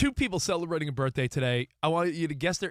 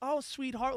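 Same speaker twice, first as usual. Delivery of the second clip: put-on kind motherly voice, higher and quieter; 8 semitones higher, 6 dB quieter than usual. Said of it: "she was being, like, a kind mom".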